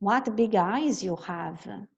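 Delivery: ordinary talk, nothing marked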